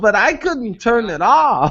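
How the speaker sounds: put-on elderly person's way of talking. Retelling a call from a seventy-nine-year-old customer: imitating the customer's way of talking. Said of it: "this is almost exactly how she talks".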